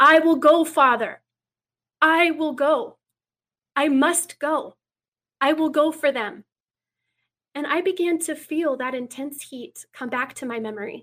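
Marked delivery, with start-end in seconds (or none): 0.0-6.4 ringing, slow, drawn-out shout, faintly British. Recounting a shout they heard, addressed to Father, retelling a shout. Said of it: "but I heard a shout".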